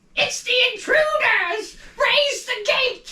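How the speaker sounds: very high, squeaky goblin voice. Narrating a game scene, voicing another goblin at the fortress: goblin voice. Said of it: "the voice of another goblin going".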